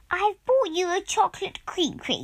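proud, pleased tone. A man arriving with a cake tin announces his gift, proud. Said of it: "he said proudly".

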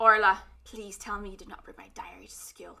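put-on line in Irish accent. Recapping a story, quoting a character's line: put-on Irish accent. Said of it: "let me get my Irish accent".

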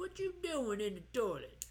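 casual put-on country accent, swooping pitch. Repeating the imagined dad's line to Jimmy, country accent. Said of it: "for some reason I get a country accent".

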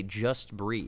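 ordinary talk

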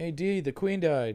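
light yelled call. Retelling a scene from an Always Sunny episode: imitating a yell from Always Sunny. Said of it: "and he yells".

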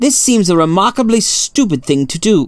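cutting, pointed, sharp high-pitched tone. Holmes objects to the professor's request, spoken sharply. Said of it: "Holmes said sharply".

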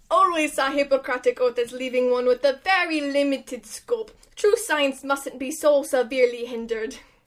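put-on, fake Ukrainian accent. Performing the doctor's quote again after being asked: put-on Ukrainian accent. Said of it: "do it".

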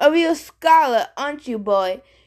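contemptuous, scornful, sneering jeer. A spirit being questioned by a boy answers him, sneering. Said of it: "Tantalus sneered at me".

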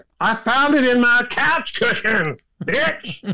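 high-pitched, drawn-out, comedic drawl. Retelling a comedy bit where Mitt Romney talks: Dave Chappelle voice. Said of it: "he'd say it like".

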